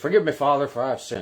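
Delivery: put-on convincing Irish accent. Telling an irish joke, redoing the confessing man's line: expert irish accent. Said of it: "my expert Irish accent".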